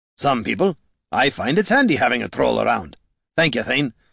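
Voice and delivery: plain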